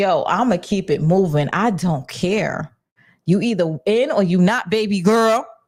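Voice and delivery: ordinary talk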